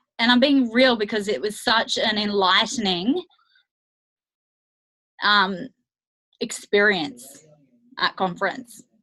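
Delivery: voice catching as feeling wells up. A speaker recalling an experience at a conference starts getting emotional. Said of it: "I'm getting emotional".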